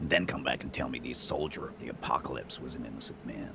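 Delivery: plain reading voice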